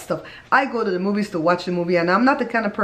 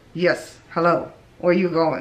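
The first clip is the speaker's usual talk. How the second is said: speaking through tightly clenched, gritted teeth; 3 semitones lower than usual. Speaker imitating people they dislike, talking through clenched teeth. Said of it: "They clench their teeth like this and they go".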